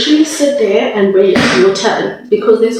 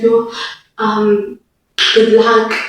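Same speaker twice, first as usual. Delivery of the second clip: ordinary delivery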